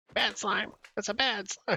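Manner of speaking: pitched way up, done badly. Trying to do a Cartman voice: horrible Cartman impression. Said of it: "That was a horrible impression".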